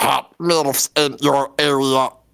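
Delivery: cute, flat, robotic put-on voice. Answering a request for a Wall-E impression: Wall-E voice. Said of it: "what is your best, uh, Wall-E impression?".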